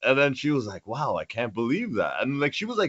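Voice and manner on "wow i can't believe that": exaggerated, over-the-top, overly surprised amazement. Retelling what a massage therapist said about a tattoo: imitating someone overly surprised. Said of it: "overly surprised".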